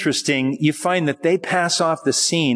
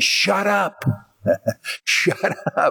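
mock screaming crowd, very slow, every word drawn out; 4 semitones higher than usual. Retelling the crowd around a man crying out to Jesus; mock screaming crowd. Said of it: "they were screaming at him".

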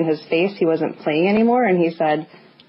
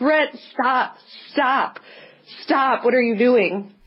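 high, slow, drawn-out screaming; 7 semitones higher than usual. A testifying woman recounts a face-to-face confrontation with a man, retelling screaming at someone. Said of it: "I'm screaming at him".

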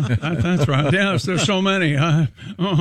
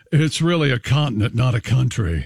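put-on pretentious voice, pitched lower; 4 semitones lower than usual. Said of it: "In my Tom, best Tom, pretentious voice".

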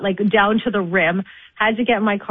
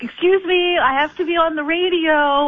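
slow, pitched-up, self-important big-shot tone; 9 semitones higher than usual. Retelling being blocked by a police officer's cones, acting like a big shot. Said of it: "like a big shot".

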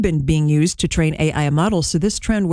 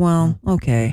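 sounding let down. Demonstrating one phrase said several different ways, disappointed.

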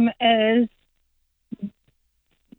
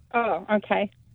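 soft, let-down, disappointed tone. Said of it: "you sounded disappointed".

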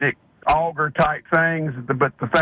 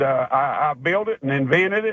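ordinary talk

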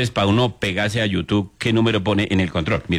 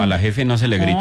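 ordinary talk, nothing marked

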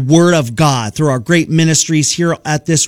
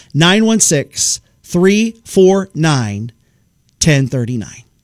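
slow, right up on the microphone. Repeating the text-in number so listeners can hear it, slow and close to the mic. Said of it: "I'll say it really close, slowly so you can hear it".

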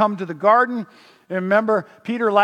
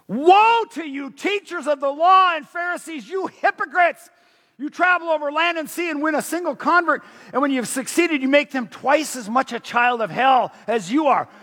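put-on raging fury at full force, loud, pitched up; 6 semitones higher than usual. Reading Jesus confronting the Pharisees aloud to listeners, acting out Jesus's loud anger. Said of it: "I'm going to be really loud because I want you to hear the anger in his voice".

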